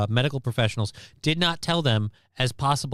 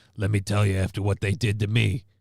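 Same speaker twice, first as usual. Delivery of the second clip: put-on woman's voice, lower pitched; 4 semitones lower than usual. Describing a woman who speaks at schools, doing her on the mic: impression of the anti-smoking woman. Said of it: "she sounds like this".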